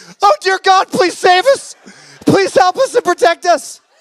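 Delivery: put-on very high, terrified, frightened child's voice. A man points to a kid and tells him to pray: imitating a scared kid praying. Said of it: "these kids are scared to death".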